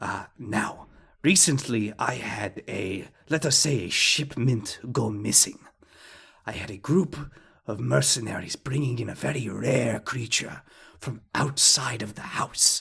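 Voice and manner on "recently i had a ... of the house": very hushed, quiet voice. Voicing the uncle describing a missing shipment: very hushed tones. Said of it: "he says this in very hushed tones".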